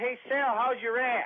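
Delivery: put-on yell at top of lungs, high, taunting. Retelling a guy yelling out a passing van window: imitating someone yelling at top of lungs. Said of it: "he yells out the window at the top of his lungs".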